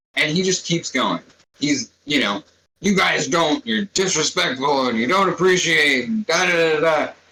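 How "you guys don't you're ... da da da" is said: loud put-on shouting in a man's voice. Retelling a man's rant about a pizza box left out, imitating a man shouting. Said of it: "He's like shouting, loud as he possibly".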